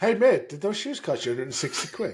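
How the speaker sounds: high, loud, mocking, taunting jeer.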